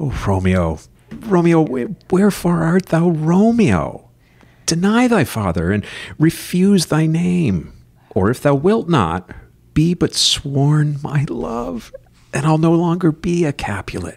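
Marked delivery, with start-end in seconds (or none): 1.1-14.2 light, high, lilting stage-reading voice. Reading Juliet's lines to an imaginary loved one: lighter voice, higher pitch. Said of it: "it was lighter".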